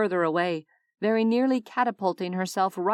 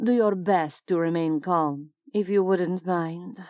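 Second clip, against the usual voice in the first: bored, detached, thoroughly unimpressed female voice. A voice beside the bed speaks to Della as she wakes with a cry, bored female voice. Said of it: "said a bored female voice".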